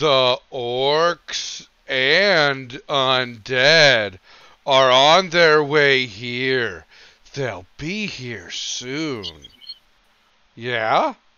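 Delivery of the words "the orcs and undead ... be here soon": very slow, deliberate, easy-to-follow speech. In a roleplay, a character repeats information to a guard, said slower to be understood. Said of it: "going to say it slower so that they can understand".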